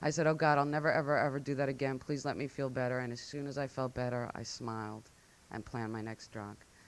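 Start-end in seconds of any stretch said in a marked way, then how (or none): 0.3-3.0 mock crying, tearful put-on voice. Retelling a drunken night, quoting a promise to God: imitating own past crying. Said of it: "I remember crying and saying".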